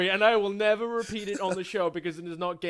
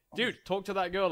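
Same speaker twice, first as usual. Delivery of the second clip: usual speaking voice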